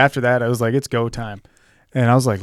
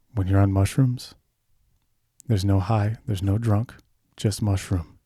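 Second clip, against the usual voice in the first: acted, utterly earnest, dead serious, flat delivery; 3 semitones lower, 4 dB quieter than usual. Retelling what a buddy said about mushrooms: imitating D, super serious. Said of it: "He was super, super serious".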